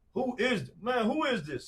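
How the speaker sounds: high, loud angry snap. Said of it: "And I snapped".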